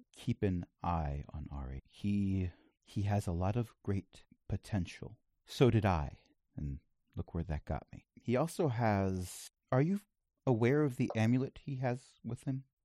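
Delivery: hushed, quiet, confiding tone. Game master as Ardent the First, alone with Vex in the farmhouse, lowered voice. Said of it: "he lowers his voice a bit and says".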